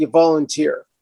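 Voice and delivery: put-on very stern reply. Retelling how a member answered a question about getting a key; imitating a very stern voice. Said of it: "in a very stern voice".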